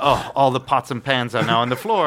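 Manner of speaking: plain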